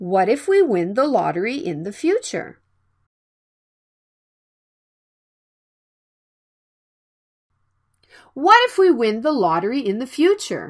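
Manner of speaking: self-assured, sure, confident delivery. Showing learners how to say a practice sentence: confident voice. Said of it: "Please repeat after me in a confident voice".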